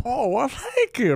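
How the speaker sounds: put-on old man voice, high pitched. Responding to a compliment on the bit, old man impression. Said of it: "it's a good old man impression".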